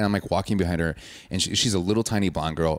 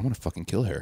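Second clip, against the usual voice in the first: mock under-breath mutter, quieter; 5 dB quieter than usual. Recounting a scene, quoting a woman muttering under her breath. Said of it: "underneath her breath".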